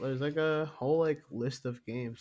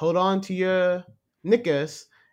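put-on loud, slow announcer voice with Scottish accent; 5 semitones higher, 8 dB louder than usual. Retelling how the Scottish announcer character talked: Maggie's Scottish accent. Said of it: "the Scottish character".

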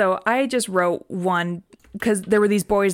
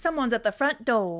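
announcing smart-speaker assistant voice; 4 semitones higher, 5 dB quieter than usual. Asked to do it again, speaker does the Google Home voice. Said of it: "Could you do your Google Home voice again".

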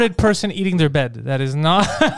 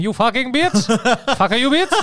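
put-on Indian man's accent; 4 semitones higher than usual. Mocking how a friend would say it, imitating an Indian accent. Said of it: "You would say it like that, like an Indian man".

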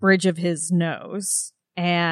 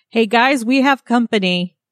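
high, raised calling-out shout; 4 semitones higher, 7 dB louder than usual. During a game scene, a player speaks in character as Alina: Alina shouting. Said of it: "Alina shouts".

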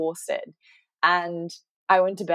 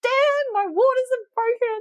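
play-acted screaming out, very high; 3 dB louder than usual. Retelling running to the toilet as the waters broke, retelling screaming out. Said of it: "I ran to the toilet and I screamed out".

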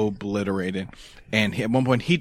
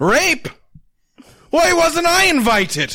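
put-on abrupt English accent, high and loud; 8 dB louder than usual. Retelling a drunk friend's outburst in a hallway: imitating a sudden English accent. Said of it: "Very English all of a sudden".

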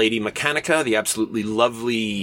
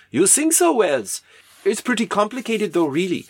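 put-on very high-pitched German accent; 10 semitones higher than usual. Acting out Jules Verne talking with H.G. Wells: German accent for Jules Verne. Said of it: "I'm doing a German accent for a Frenchman".

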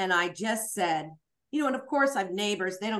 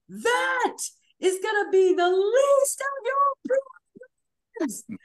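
piercing, high, drawn-out scream; 5 dB louder than usual. Recounting being berated after taking someone's phone, retelling a scream. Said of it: "and then i screamed".

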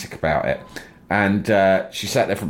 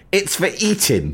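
haughty, posh, entitled lady voice, very high; 10 semitones higher than usual. Retelling a customer in a posh deli: imitating a posh entitled woman. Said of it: "posh entitled women".

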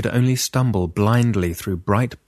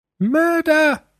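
very high, shrill, piercing shriek; 3 dB louder than usual. Reading a story, Lucinda calls out from the hallway: shrieked. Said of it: "shrieked Lucinda".

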